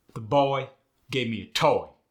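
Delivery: loud Midwestern US accent, tight firm vowels. Showing how the sentence sounds in the Midwest: Midwestern US accent. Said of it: "But in the Midwest".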